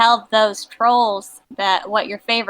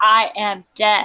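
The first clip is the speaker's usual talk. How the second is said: proud tone, slower. A player's character declares this to the others in a game, proud declaration. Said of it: "I take a wide stance and I proudly de- declare".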